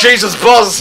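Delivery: alarmed shout, high-pitched and loud.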